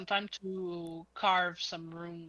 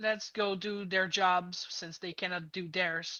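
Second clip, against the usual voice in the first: plain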